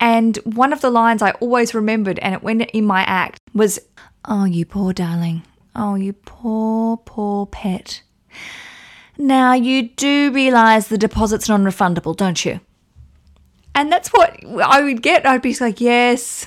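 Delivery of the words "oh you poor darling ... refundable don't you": insincere, sugary, fake sympathetic tone. Retelling what others said to the speaker, imitating fake sympathy. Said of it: "full of faux sympathy".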